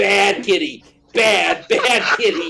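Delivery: put-on very slow, drawn-out, high voice. Retelling how a cat gets scolded: scolding a cat, retold. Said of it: "this is exactly the same tone as I use when I'm saying".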